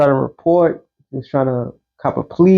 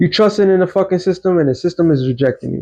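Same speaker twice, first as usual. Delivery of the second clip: usual speaking voice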